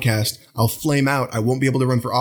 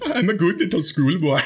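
bad fake German accent, much higher; 5 semitones higher than usual. Joking that a friend's surname sounds like schoolboy, in a terrible German accent. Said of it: "That was a terrible German accent".

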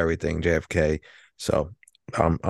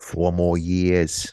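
badly done put-on Boston accent. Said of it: "doing bad imitations of his accent".

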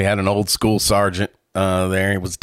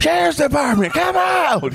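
very high-pitched screaming. Retelling how sergeants yelled at a deaf girl's locked door: imitating a sergeant screaming. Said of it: "the old school sergeants just start screaming".

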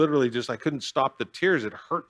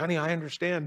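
imitated crying voice, pitched higher; 3 semitones higher, 4 dB quieter than usual. Retelling a phone call, quoting what mom said, imitating mom crying. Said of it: "she starts crying".

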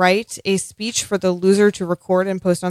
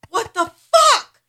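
angry and frustrated, higher. Reacting when the other speaker picks Littlefinger: upset and mad. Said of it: "I am so upset right now".

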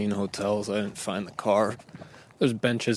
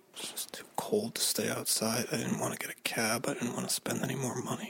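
hushed whispered speech; 2 semitones higher, 8 dB quieter than usual. Recording in a hotel stairwell after getting lost: whispering. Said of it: "the reason I'm whispering".

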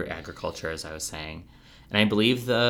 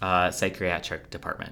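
plain

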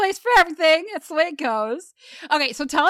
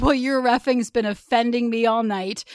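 usual speaking voice

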